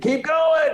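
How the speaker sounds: high, loud shouted yelling.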